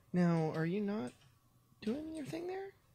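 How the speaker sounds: very high voice, climbing upward. Speaker talks to something while checking how fast it drains; voice going really high. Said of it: "my voice went really high there".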